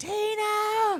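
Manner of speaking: very high, long, drawn-out acted wailing scream. Retelling a horror movie scene, imitating Danielle Harris screaming the name. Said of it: "Danielle Harris is screaming".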